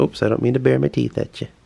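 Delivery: fast put-on dog voice.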